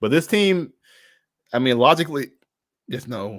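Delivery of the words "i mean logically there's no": raised voice suddenly cutting out. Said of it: "My voice just went out".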